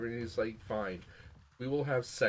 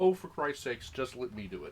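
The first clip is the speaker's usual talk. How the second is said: ordinary delivery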